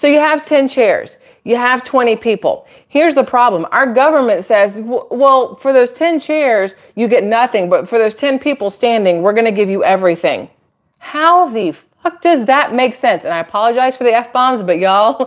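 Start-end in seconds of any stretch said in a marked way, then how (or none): 11.0-13.2 fired-up, heated outburst. Explaining a musical chairs analogy about the government, heated. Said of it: "when I'm heated".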